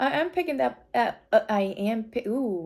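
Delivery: stuttering. A reader describing someone's energy to the listener, stuttering. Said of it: "I'm stuttering".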